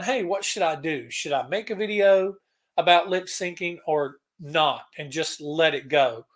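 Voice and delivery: ordinary talk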